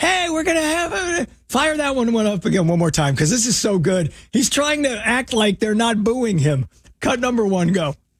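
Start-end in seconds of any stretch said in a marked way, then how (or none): 0.0-1.3 tiny, squeaky, very high-pitched little voice. Mocking a voice just heard in a played clip: imitating a squeaky voice. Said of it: "that little squeaky voice that you heard".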